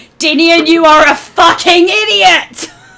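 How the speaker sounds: shrill, furious, all-out scream. Turning around as a blue dragon's head pops out the door, the character screams. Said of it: "I just scream".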